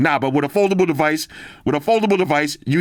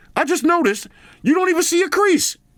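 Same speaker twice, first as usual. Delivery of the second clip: very high put-on voice. Checking a shirt for creases, talking to a bro in a high-pitched voice. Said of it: "Why am I using a high voice".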